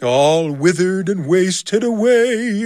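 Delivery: slow, eerie, ghostly voice, "away" drawn out. Reading a story aloud, answering his terrified question in a spooky voice. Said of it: "in that same spooky voice".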